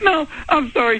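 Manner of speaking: high-pitched, laughing voice.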